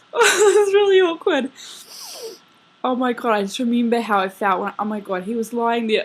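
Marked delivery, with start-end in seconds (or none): 0.1-1.5 high, loud laughing and crying at once. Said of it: "I'm gonna cry".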